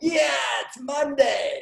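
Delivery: happy, high, creaky dog voice. A man retells his dog's morning talk with him, imitating Lulu's happy voice. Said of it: "Lulu is happy all the time".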